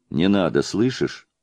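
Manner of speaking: plain reading voice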